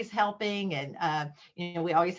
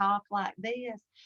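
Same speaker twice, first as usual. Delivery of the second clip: exaggerated, slow Southern drawl; 2 semitones higher, 3 dB quieter than usual. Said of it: "that Southern drawl and they".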